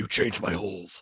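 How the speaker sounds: bad put-on gravelly superhero voice. Joking about a movie scene with the others: bad Batman voice impression. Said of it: "Bad impression".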